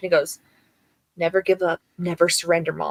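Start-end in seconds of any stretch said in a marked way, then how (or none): 1.2-2.9 put-on child voice, all serious. Retelling what the son says to his mom: imitating Rafi, all serious. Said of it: "he gets all serious and he goes".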